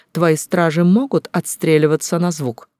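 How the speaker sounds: ordinary delivery, nothing marked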